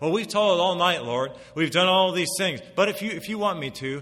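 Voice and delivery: mocking tone.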